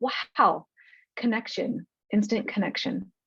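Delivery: choked-up voice, thick with emotion. Reacting to a moving story from a guest's book, choked up with emotion. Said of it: "a little choked up right now".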